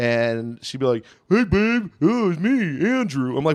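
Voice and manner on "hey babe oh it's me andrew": slow, high, goofy dopey voice. Retelling how an ex imitated the speaker, mocking impression. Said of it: "my ex would do an impression of me".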